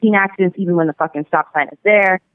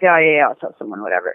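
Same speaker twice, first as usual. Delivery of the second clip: put-on irritated dismissive tone, lower; 6 semitones lower than usual. Retelling how he brushed off a warning about the intersection, mock-irritated dismissal. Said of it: "He's real irritated".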